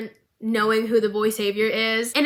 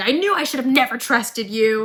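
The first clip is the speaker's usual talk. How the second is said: put-on angry yelling; 3 dB louder than usual. Retelling an argument between two characters tied to a pole: imitating Caitlyn yelling. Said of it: "she's, like, yelling".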